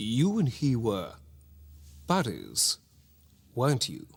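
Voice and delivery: put-on slow, swooping upper-class posh English accent. Recalling a scene, quoting a line in a posh accent. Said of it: "(Posh accent)".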